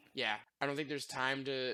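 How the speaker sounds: plain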